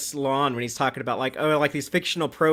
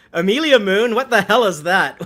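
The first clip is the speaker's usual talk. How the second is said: put-on loud, raised, high-pitched, strong Scottish accent; 6 semitones higher, 8 dB louder than usual. Retelling a scene that cuts to a reaction: Martin Quinn's Scottish accent. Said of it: "brilliant natural Scottish accent, and he just says".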